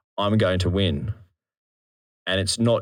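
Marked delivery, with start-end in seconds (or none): none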